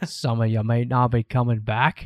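awful, put-on cowboy movie hero voice. Opening the show with a joke bit: awful John Wayne impression. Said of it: "That's my awful John Wayne impression".

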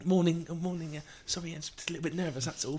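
put-on delicate, dainty girl voice. Imitating a dainty girl getting in for her driving test: put-on dainty girl voice. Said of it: "if some dainty girl gets in".

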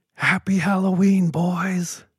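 high, loud yelling.

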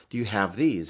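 put-on broken English speech. Retelling a father's question to a man at a drugstore in mexico: imitating broken english. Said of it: "in broken English".

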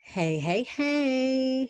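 very high, phony, overdone cheery voice. Greeting the other speaker at the start of the episode: fake-sounding greeting. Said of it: "that sounded so fake".

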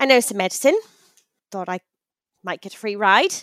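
put-on mixed Irish and British accent. In a roleplay scene, a passenger explains why they rode along, Irish-British mixed accent. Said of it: "It's a mix of Irish and British".

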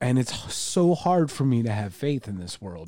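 voice catching, choked up with emotion. Talking about how hard it is to have faith: getting choked up. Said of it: "I'm gonna get a little choked up".

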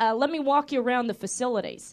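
plain

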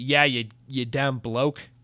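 put-on Australian accent. Reading out a listener's letter, imitating Jay's Australian accent. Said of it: "I think he said an Australian accent".

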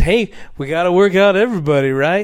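very loud, dripping with sarcasm. Retelling what he said to the media standing there, mock-sarcastic. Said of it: "very sarcastically".

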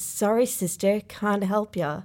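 ordinary delivery

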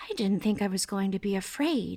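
almost under the breath. A girl riding toward Riverboro admits something to her companion, almost under her breath. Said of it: "she said almost under her breath".

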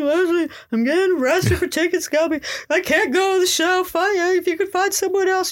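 put-on sobbing, tearful crying voice, way up high. Retelling calling her friend while getting arrested, acting out her own crying. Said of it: "I'm like crying".

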